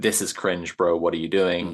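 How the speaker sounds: ordinary talk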